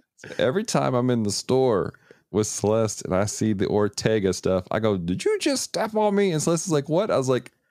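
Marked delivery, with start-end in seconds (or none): 5.0-6.3 put-on country accent, pitched very high. In a store, repeating a line from Gundam in a country redneck accent. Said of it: "country, like, redneck accent".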